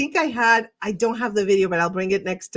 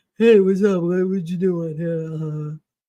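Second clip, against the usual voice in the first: put-on low, dopey dumb guy voice; 4 semitones lower than usual. Showing the voices used in comedy, now doing the dumb guy voice. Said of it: "And my dumb guy voice".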